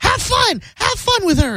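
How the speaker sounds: very high, swooping, yelled call. Describing her yelling after him as he heads out on his bike, retelling a woman's yell. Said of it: "you'll hear her yelling like".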